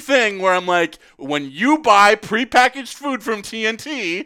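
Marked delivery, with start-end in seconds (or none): 1.2-4.3 loud, stern, slow yelling. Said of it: "having to yell at him".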